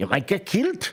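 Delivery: put-on Scottish accent. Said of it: "Can you do a Scottish accent?".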